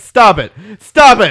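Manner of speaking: high, very loud, repeated yelling. Comparing a movie ending to a girl and a frat guy, imitating her yelling. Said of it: "And she's just yelling".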